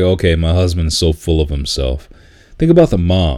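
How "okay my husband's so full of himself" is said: ordinary talk, nothing marked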